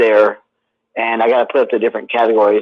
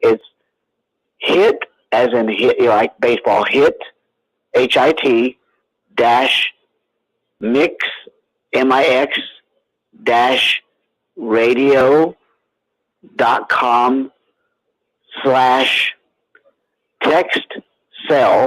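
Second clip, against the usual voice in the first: speaking very slowly. Giving listeners a lengthy web address for a book, speaking very slowly. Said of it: "I'm going to speak this very slowly".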